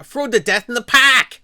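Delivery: put-on very high, very loud, shrill, booming Jersey accent, ghost voice. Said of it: "Are you gonna haunt me with that accent?".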